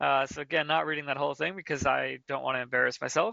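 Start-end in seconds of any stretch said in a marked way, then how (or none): none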